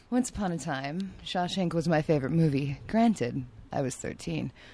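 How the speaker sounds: soft, put-on sultry, seductive sexy voice. Asked to save everyone with your sexy voice, talk about Shawshank in a put-on sexy voice. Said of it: "is sexy voice done?".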